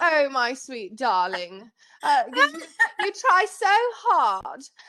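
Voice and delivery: refined, elegant British voice. Describing the voice the speaker had pictured having, in an elegant, almost british voice. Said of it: "more like elegant, almost British voice".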